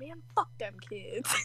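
muttering under breath. Speaker reenacts what he mutters while running, mumbling. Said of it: "I'm just mumbling".

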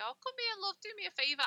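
sweet, lovely, very high grandma voice. Contrasting other people's grandmas with her own: imitating a sweet grandma. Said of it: "sweet, lovely grandmas that say".

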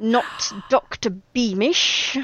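hissing, hissed voice. Narrating a story, voicing Eleanor's reply about who it is, hissing.

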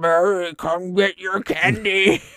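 very slow, loud, muffled, distorted, creepy eerie call. Retelling how the Nayuk call children up by name: muffled, distorted, scary voice. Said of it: "in like a muffled and distorted, scary way".

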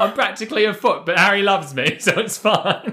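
bad English accent, pitched very high. Parodying characters introducing themselves, as Ginny in a bad English accent. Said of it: "in a bad English accent".

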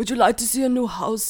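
put-on slipping into German-sounding accent. Imitating a realtor offering to show a house, slipping into a German accent. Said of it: "No, you're going German".

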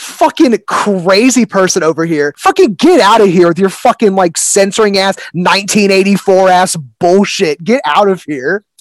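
heated, impassioned, fired-up rant. A podcast guest, muted on mic by a co-host, launches into a passionate rant. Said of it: "after that very passionate".

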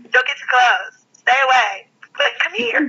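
squeaky put-on voice. Recalling a woman's clip for a friend on mic, in a squeaky B. Simone voice. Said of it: "real kind of squeaky voice".

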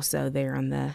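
ordinary talk, nothing marked

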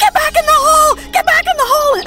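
high, loud, frantic yelling.

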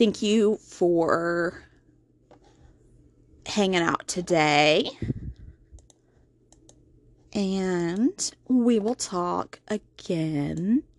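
unhurried, deliberate, slow and drawn-out. Speaker closing by thanking the audience for hanging out, talking slowly. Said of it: "I don't know why I'm talking so slow".

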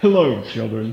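put-on character voice with British accent. Joking about a gray-haired look, playing British Santa Claus voice. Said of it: "British Santa".

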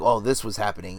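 ordinary talk, nothing marked

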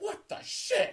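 very high, shrill, full-lung scream, acted out. Retelling the moment of hearing a friend's first kiss news: imitating own past scream. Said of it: "I went on the top of my lungs".

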